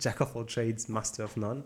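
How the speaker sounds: clear put-on English accent. Repeating an English saying when asked to: English accent. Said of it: "avec l'accent anglais".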